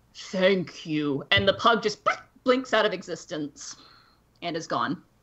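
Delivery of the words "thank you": deep, low voice. Voicing a voice heard in the back of a player's head: deep voice. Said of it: "this deep voice in the back of your head go".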